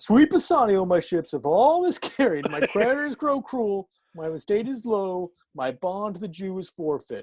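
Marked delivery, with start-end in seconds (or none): 0.0-2.5 openly sarcastic, dramatic reading. Trying to read an Elizabethan passage aloud, sarcastic reading. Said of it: "Let me see if I can read this sarcastically".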